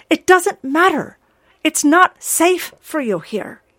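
frantic, desperate, high and loud voice. Harold answers the ogress, speaking desperately. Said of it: "Harold said desperately".

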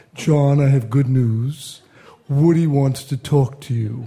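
very slow, drawn-out speech, each word taken slowly. Retelling Anthony's first phone call, imitating Anthony's slow speech. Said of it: "he speaks very slowly".

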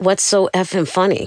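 put-on angry voice. Recalling snapping at someone who kept laughing at them: retelling an angry outburst. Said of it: "And then I got really angry".

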